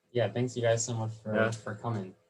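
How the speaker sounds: sarcastic-sounding tone. Thanking the others for coming as the recording ends: sarcastic-sounding tone. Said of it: "Why you sound so sarcastic?".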